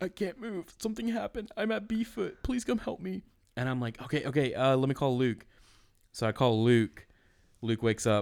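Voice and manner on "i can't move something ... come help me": mock very high, weepy, sobbing pleading. Retelling a late-night phone call from someone begging for help, imitating someone crying. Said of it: "I hear him like crying on the phone".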